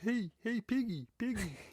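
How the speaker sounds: very high-pitched puppet voice. Calling out to Piggy: Kermit voice. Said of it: "I can do Kermit's voice".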